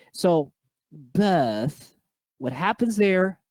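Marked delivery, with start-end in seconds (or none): 0.9-1.9 playful put-on British accent on birth, lazy R. Demonstrating the lazy R in birth, in a not authentic British accent. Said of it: "the R is lazy, but the short I remains".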